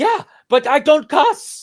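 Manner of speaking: high, loud, slow, thick Eastern European accent.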